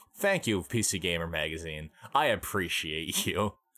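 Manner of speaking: heavy, dripping, laid-on-thick sarcasm. Speaker thanking PC Gamer Magazine for its game advice, really sarcastic thanks. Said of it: "That sounded really sarcastic".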